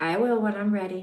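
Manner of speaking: grounded, even, very masculine delivery. Retelling how he looked at her and answered, imitating masculine energy. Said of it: "in this very masculine energy".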